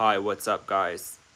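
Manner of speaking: artificial, forced fake drop to low voice. Asked about doing a fake voice drop, the speaker demonstrates one: fake voice drop. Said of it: "If I do a fake voice drop".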